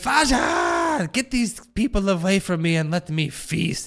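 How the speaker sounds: half-shouted, animated mild yell, voice swooping around. Voicing a creature who yells for blood while feasting: yelling. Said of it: "He's yelling".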